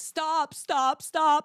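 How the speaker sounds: play-acted, frantic, desperate, high, panicked shrieking. Recounting the moment on the phone with nine one one, retelling a panicked scream. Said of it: "I'm screaming on the phone".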